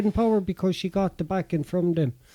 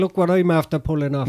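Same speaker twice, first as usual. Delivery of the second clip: plain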